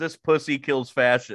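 ordinary talk, nothing marked

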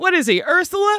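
mock, very high, shrieking scream. Recounting what they shouted while watching it with a friend, retelling a scream. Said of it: "and then I screamed".

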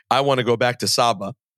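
ordinary delivery

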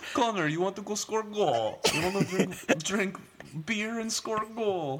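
shrill, loud, put-on Russian accent. Joking with Nolan, act out someone speaking to Connor in a put-on Russian-sounding accent. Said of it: "you made him sound Russian".

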